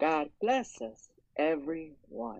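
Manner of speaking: put-on child voice, high and very slow. Showing off doing many voices, in a Tiny Tim voice. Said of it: "I'm going to do the voice of Tiny Tim".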